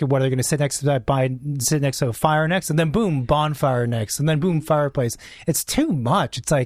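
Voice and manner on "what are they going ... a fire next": ordinary delivery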